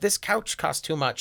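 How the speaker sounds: put-on accent with Yiddish flavor.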